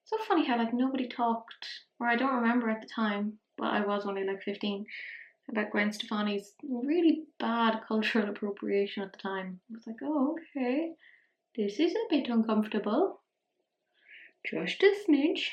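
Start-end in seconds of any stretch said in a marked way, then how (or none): 10.0-15.4 cutesy voice. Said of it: "Don't know why I'm talking like that. That's how I talk to the cats".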